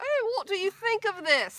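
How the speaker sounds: bad put-on English accent, very high. Describing walking through a store with a companion, bad fake English accent. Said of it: "we talk in our fake English accents".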